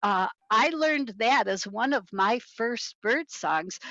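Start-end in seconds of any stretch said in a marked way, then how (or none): none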